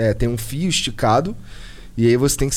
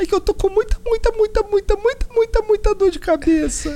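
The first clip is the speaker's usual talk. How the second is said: squeaky, very high, tiny little voice. Act out a soldier answering his captain, in a put-on tiny little voice. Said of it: "Uma vozinha assim".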